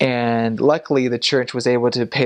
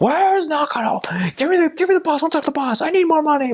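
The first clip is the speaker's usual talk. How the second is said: put-on male yelling, much higher pitch. Retelling how a man who calls the mission home yells at whoever answers: retelling someone yelling. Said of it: "he'll start yelling at you like".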